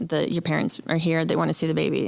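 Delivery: ordinary delivery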